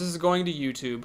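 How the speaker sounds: ordinary talk, nothing marked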